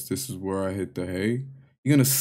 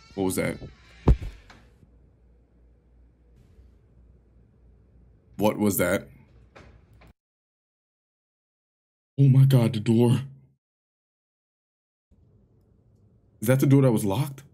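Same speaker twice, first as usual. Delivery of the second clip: panicking, rattled, frantic, freaked-out blurting. Hearing a noise at a locked door in the game, freaking out. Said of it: "I'm freaking out right now".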